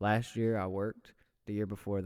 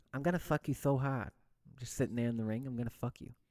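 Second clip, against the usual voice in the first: put-on lisping boxer voice, pitched higher; 4 semitones higher than usual. Quoting a favourite Mike Tyson interview: Mike Tyson voice. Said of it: "You're really good at the voice".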